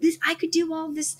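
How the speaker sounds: high-pitched, pleading, begging tone. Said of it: "really begging God".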